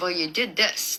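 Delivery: ordinary delivery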